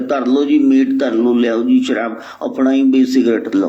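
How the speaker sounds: ordinary delivery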